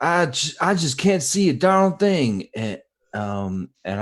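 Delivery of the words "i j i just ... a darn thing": full-volume, very loud, very high shriek. Playing a character who can't see and is pinned to a wall: screaming in character. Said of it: "I'm gonna scream out".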